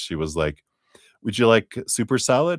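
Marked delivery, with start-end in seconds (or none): 1.2-2.6 high-pitched, rushed, rattled-off, run-together delivery. Telling a story about his brother, mimicking the waitress asking really fast. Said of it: "The waitress said it really fast".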